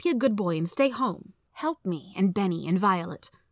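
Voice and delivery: ordinary talk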